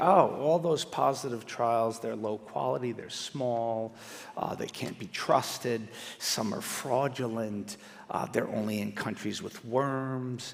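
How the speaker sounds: soft, slow, arrogant delivery. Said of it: "who will very arrogantly say".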